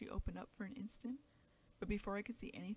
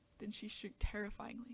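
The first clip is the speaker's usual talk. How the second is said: plain reading voice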